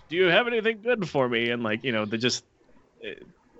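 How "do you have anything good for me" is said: squeaky, very high, put-on elderly voice. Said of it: "they use nothing but old people for the voice acting".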